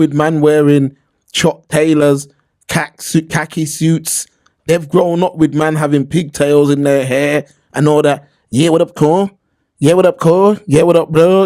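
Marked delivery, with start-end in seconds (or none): 8.5-11.5 put-on Los Angeles American street accent. Imitating how men in la talk: imitating la american accent. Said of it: "They've grown up talking like that".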